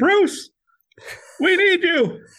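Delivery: very high-pitched, slow, unhurried, drawn-out delivery. Retelling a friend's phone call asking for help: imitating Jeff's high-pitched voice. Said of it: "in his high-pitched voice".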